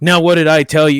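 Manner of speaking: put-on sarcastic tone. Retelling what was said to the kids in front of a cop: retelling own sarcastic remark. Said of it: "kinda sarcastically".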